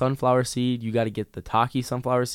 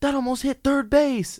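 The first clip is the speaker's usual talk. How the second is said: mock squealing, very high, upset scream; 14 semitones higher than usual. Retelling a baseball game where a dad screams at the umpire: imitating a dad screaming. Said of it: "the dad just screams".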